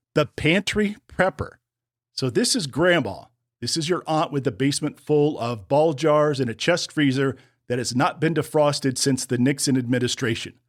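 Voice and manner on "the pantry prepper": high voice, giggling through barely held laughter. Naming the first type on a list, laughing while talking. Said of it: "I cannot say this without laughing".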